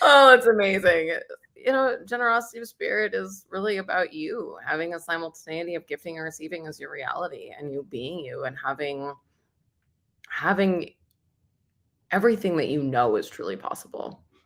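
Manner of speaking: tearful, choked-up voice, speaking through tears. Asked to sum up the tool of the day, the speaker answers tearful and crying. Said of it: "I can't even talk. I'm already crying".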